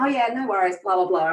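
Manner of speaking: put-on humble, modest North of England accent. Retelling brushing off a compliment: imitating own humble North of England brush-off. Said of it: "typical North of England, [name], humble style".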